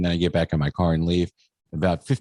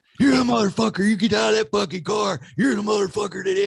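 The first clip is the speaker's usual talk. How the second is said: mock screaming man voice, pitched higher. Retelling a confrontation with a man on a bike: imitating a man screaming. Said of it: "some homeless guy screaming at me".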